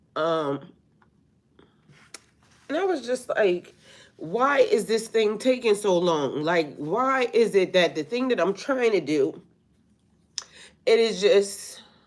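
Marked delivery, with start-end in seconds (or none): 0.1-6.4 high, tearful crying speech. Telling listeners what made them emotional that morning, crying while talking. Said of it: "excuse me for crying".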